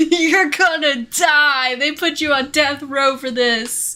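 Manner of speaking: loud, deliberate, over-intense dire delivery. Mocking an anti-piracy commercial's warning: imitating an overly intense commercial. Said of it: "There's no reason for it to be so intense".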